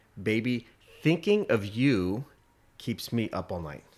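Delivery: ordinary talk, nothing marked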